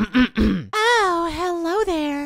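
put-on girly voice, pitched very high. Told to step up their game, the speaker tries the girl voice too. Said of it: "Let me try".

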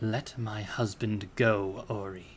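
menacing, very slow, low scary voice. Narrating Mom speaking to the magician beside the uncle, scary low voice. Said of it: "said in a scary, low voice".

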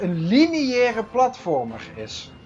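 lineaire stressed, slow and drawn out.

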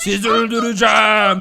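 mock, pretend monster voice.

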